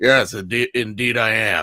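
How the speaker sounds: put-on Southern accent. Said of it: "you have a southern accent".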